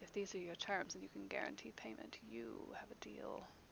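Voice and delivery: hushed, very soft, low, faintly menacing voice. A towering character leans in over a man to accept his terms: very soft, low, mildly threatening. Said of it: "in that very soft, low, almost mildly threatening voice".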